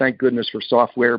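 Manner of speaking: ordinary talk, nothing marked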